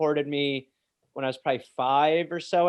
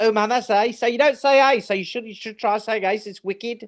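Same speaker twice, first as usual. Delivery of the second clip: pitched-up put-on English accent; 7 semitones higher, 4 dB louder than usual. Retelling what you said at school after England: imitating own past English accent. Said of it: "be like".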